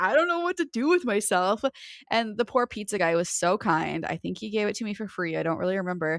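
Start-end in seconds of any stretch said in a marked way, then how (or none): 0.0-1.6 high, tearful, sobbing voice, crying while talking. Retelling being at a pizza place after being hit: imitating own past crying. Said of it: "I'm still crying because I'm just like".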